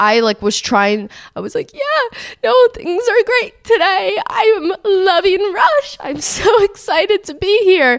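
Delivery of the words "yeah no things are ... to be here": high, teary voice, sobbing through the words. Retelling talking to a sorority girl while crying, imitating crying while talking. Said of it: "I'm crying".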